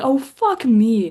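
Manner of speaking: put-on loud, high, heavy, hard Australian accent. Retelling a driver's reaction to his engineer, in a strong australian accent. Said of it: "how h- hard his Australian accent comes out".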